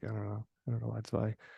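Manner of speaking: ordinary talk, nothing marked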